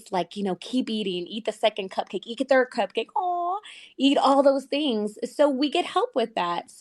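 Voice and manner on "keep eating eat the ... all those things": put-on wicked, evil little tempter voice. Describing what Manjaro helps with, voicing it in a put-on evil little voice. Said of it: "that evil little voice".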